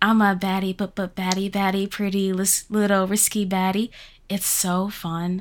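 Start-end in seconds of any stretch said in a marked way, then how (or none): 0.0-3.9 put-on baby voice. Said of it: "and their baby voice".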